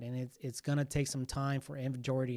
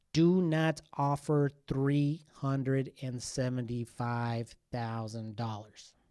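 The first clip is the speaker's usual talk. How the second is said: very slow, deliberate, very clear delivery; 4 dB louder than usual. Explaining the housing market to buyers, speaking very slowly and clearly. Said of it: "explain this very slowly and very clearly".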